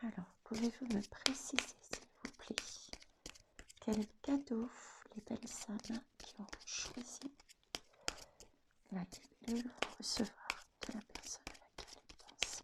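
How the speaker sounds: soft, hushed, unvoiced whisper.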